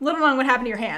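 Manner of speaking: sudden, worried, anxious, concerned tone. Retelling a character seeing an injured hand: imitating someone worried. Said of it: "looks immediately worried".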